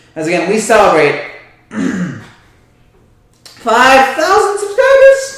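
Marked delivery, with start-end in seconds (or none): 3.5-5.4 high voice breaking and cracking mid-line. A show host invites viewers' questions and comments, voice cracking. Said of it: "voice crack".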